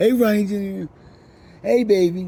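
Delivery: put-on loving, sugary, sweet grandmotherly voice. Recalling how his grandmother called him, imitating grandma's sweet voice. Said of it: "I remember her sweet voice".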